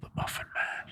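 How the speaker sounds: hushed, sinister whisper. Delivering a rehearsed line on cue after a practice try; whisper. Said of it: "That was a whisper".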